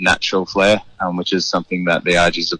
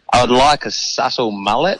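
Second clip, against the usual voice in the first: put-on ocker Australian accent, slower; 5 semitones higher than usual. In the barber's chair, retelling what Ned asked across the room, imitating Ned's ocker accent. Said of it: "with his like ochre voice".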